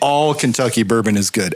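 ordinary delivery

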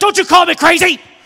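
very loud, high, fierce angry shout. Retelling mom whipping around after being called crazy, retelling mom's angry retort. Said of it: "whipped around with a vengeance".

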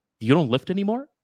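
nasty, snarky jab. Retelling what people at school said: imitating a snarky remark. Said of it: "this snarky attitude".

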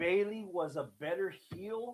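carefully paced, slowed voice. Slowing down so as not to throw listeners off, saying it slower. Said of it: "I'm going to try to say this a little bit slower".

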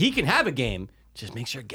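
ordinary delivery

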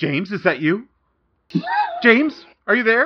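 very high, panicked, frantic crying out. Someone picks up a ringing phone, desperate to reach James; frantic. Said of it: "She's only 19. / So you only hear it ring like half a ring, and someone picks it up, / and you hear very frantically".

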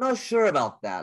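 doubtful, skeptical tone rising upward. Demonstrating different speaking voices, showing the skeptical voice that goes up. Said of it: "you can hear my voice going up".

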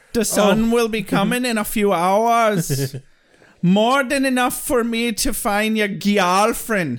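poor fake Jamaican accent, "hours" drawn out. Acting out a woman's line from a scene for the others, bad Jamaican accent. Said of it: "Definitely a Jamaican accent".

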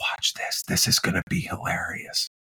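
soft, unvoiced whisper. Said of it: "he whispers in my ear".

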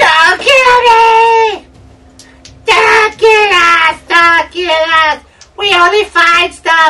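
very high, very loud, drawn-out pleading screaming, "me" stretched. A game master voices a cowering creature begging a player not to kill it, screaming. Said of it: "he screams".

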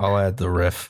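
most defeated, utterly defeated-sounding voice. Agreeing to add a requested riff: most defeated voice. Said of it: "in the most defeated voice I've heard from you in weeks".

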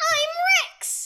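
very high-pitched, loud cartoon character voice. Performer in a four-hour app session delivers a line in a high-pitched voice. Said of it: "I really need to high pitch my voice".

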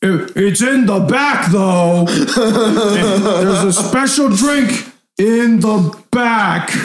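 overly loud, very slow, high, drawn-out delivery. Voicing the old bartender offering the group a special drink: too loud. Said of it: "really loud".

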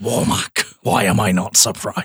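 put-on low Scottish accent, film-star style. Imitate how Connery says the name of the villain Warmack, in a Connery Scottish accent. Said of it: "Apologies for the Scottish accent".

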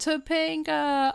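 high, slow, anguished scream. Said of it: "starts screaming".

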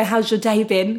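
ordinary talk

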